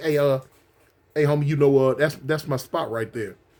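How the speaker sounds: mock courteous, easygoing, polite, gentle tone. Acting out how people say it in a polite way: imitating a polite request. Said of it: "they gonna say it in a polite way".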